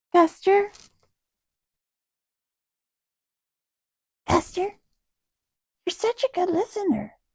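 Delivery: very high, loud, praising kitty-talk voice. Speaking to the cat while filming, praising it, in a kitty voice. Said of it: "I have to use my kitty voice".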